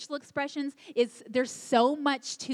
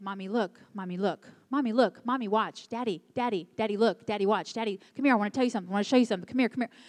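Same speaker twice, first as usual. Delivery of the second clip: put-on relentless, insistent, repeated childlike calling; 2 semitones lower than usual. Speaking to parents, imitating a child calling mommy and daddy over and over. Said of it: "Once your child has said".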